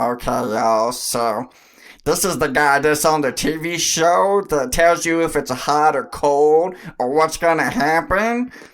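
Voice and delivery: loud, belted-out cartoon character voice. Giving a guessing-game clue, doing it as Meatwad: Meatwad voice. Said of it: "I'm gonna do it as Meatwad".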